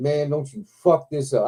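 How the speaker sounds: normal talking voice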